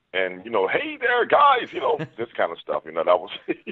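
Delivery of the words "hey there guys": very high-pitched radio DJ announcer voice. Explaining wanting to be a DJ, showing off a DJ voice. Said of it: "you had my D J voice".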